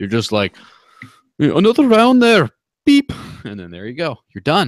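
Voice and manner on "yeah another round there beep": very loud, very high put-on Irish brogue. Acting out ordering at a pub: irish accent. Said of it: "That was a great accent".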